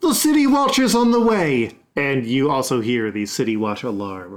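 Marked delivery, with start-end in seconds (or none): 0.0-1.7 shrill, very high shout. Voicing a lady in a bedroom while a battle rages: shouting. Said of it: "She's shouting".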